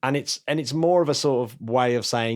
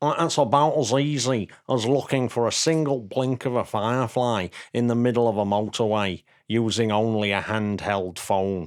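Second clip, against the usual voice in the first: put-on Mancunian accent on every word. Quoting a suggestion from a man in Manchester, put-on Manchester accent. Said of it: "that was my Manchester accent".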